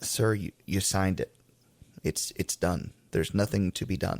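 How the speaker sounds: put-on voice holding back tears. Retelling own words to a couple after a loss: retelling own words fighting back tears. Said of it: "I'm fighting back tears at this point".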